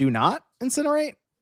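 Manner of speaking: rising, question-like tune on incinerate. Speaker shows how a battery warning label sounded to them, read as a question. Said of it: "I kind of read it like a question".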